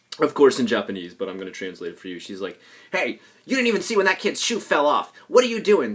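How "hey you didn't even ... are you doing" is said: furious, shrill, very high-pitched, loud angry yelling. Translating a woman's outburst at a fellow teacher; acting out angry yelling. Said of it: "she's yelling this at my".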